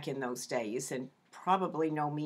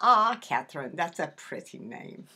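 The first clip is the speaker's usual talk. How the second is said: put-on Swedish accent, pitched a little higher; 6 dB louder than usual. Retelling what great-grandma said about the baby's name: imitating great-grandma's swedish accent. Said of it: "she said in her Swedish accent".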